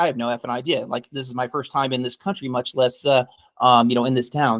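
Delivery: ordinary delivery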